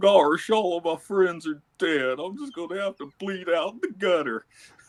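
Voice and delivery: high, resigned cartoony voice. Wanting to hear a resigned cartoony Goofy, the speaker performs it: put-on resigned Goofy voice. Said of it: "I want to hear a cartoony uh, Goofy that's like resigned".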